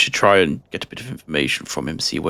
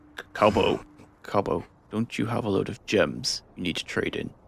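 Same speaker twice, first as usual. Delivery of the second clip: quiet half-whispered voice; 3 semitones higher, 6 dB quieter than usual. During a tabletop roleplaying game, a character speaking to Cobbo, half-whispering. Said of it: "I'm whispering this".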